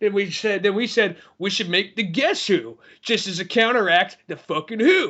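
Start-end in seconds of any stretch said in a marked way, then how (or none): none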